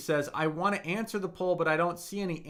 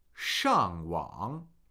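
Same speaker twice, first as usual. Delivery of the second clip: sheng in falling fourth tone, wang in dipping third tone; 11 semitones lower than usual. Reading out a name with its tones: fourth tone Sheng, third tone Wang. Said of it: "Fourth tone, third tone".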